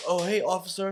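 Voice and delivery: sounding as if just roused from sleep. Retelling a police stop, acting like waking up: imitating just waking up. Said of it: "then I act like I'm waking up".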